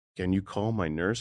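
put-on voice like a child. Retelling a dying father asking for his nurse: imitating a childlike voice. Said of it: "he was almost, like, childlike".

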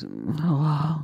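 put-on sleepy, just-woken, drawn-out "hello". Retelling a late-night call, imitating his sleepy phone answer. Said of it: "he answers the phone like this".

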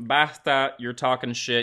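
acted, cranky, pissy, irritable priest voice. Retelling a movie scene, imitating a pissy priest. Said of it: "the priest is kinda pissy".

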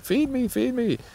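put-on very high, begging baby bird voice. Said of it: "flying around after mom or dad saying".

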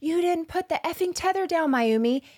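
put-on high-pitched yell.

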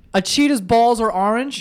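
high-pitched screaming. Asking in disbelief about a claim from another speaker: screaming. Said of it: "you're fucking screaming".

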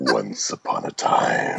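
menacing, gravelly, rough and creaky gorilla voice. A podcast host asks the voice actor to read a bedtime story in that voice; Grodd voice. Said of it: "read me a bedtime story in that voice".

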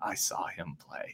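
hushed, slow, very soft near-whisper. Acting out telling grandkids by a campfire about a player: imitating hushed tones. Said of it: "you say it in, like, hushed tones".

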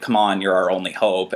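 ordinary delivery

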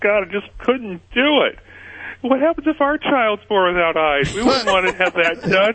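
very high voice broken by sobs. Scott retells what a woman told him, imitating her speaking between sobs. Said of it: "she just between sobs said".

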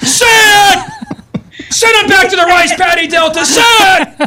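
joking loud shout. Urging another speaker to say a word, joking loud shout. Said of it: "I think I just threw my voice out".

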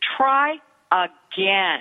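calm, composed, no-nonsense firmness. Showing parents the words to tell a disrespectful child: calm but firm. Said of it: "notice that I'm being very calm here, but I can also be very firm".

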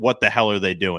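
ordinary talk, nothing marked

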